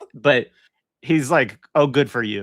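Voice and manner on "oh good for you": put-on unimpressed tone. Retelling a film scene where a character shrugs off a gun boast: imitating Sir Lawrence Wildman, unimpressed. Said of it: "not impressed at all by it either".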